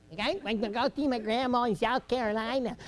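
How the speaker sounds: northern Yankee way of talking. Retelling what a boy told him, imitating a Yankee accent. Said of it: "talk like a Yankee".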